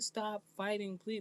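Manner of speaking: put-on pleading, imploring, begging tone. Retelling how the women pleaded with the elderly woman: imitating someone pleading. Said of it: "They were pleading with her".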